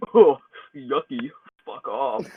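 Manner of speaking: slow, drawled insect creature voice. Voicing the junk hop bug after it bites a thumb: bug creature voice. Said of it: "it doesn't sound all high-pitched like that".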